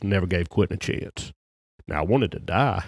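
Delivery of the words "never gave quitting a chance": deep, gruff impression voice. Speaker quoting Gene Stallings telling his story, in a deep gruff voice. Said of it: "And in his deep, gruff voice, he goes".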